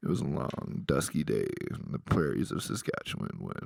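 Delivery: deep, rough-edged, creaky, raspy narrator voice. Trying out an impression he just announced: Morgan Freeman impression. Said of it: "I want to try my Morgan Freeman voice".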